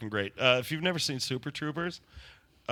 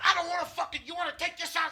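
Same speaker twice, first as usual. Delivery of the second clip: shrill, very high, hot-headed angry yell. Retelling a video of a little man in a bagel shop: imitating someone yelling. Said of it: "he's just yelling at everybody".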